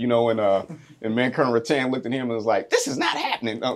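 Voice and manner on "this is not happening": put-on strong Boston accent, pitched high. Retelling what a colonel said to a chief: imitating Colonel Rattan's strong Boston accent. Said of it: "she has this strong Boston accent".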